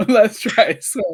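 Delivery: laughing while talking. Promising one last try at the intro, laughing while talking. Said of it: "Stop making me laugh".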